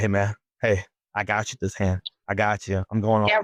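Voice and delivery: whispering. Retelling a poker hand where a player whispered in their ears: imitating a whisper. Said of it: "Junior's whisper in my ears".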